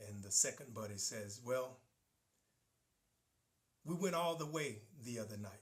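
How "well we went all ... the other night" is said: mock let-down, dejected, deflated delivery. Telling a joke, voicing the second buddy: imitating a disappointed tone. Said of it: "he said it with disappointment in his voice".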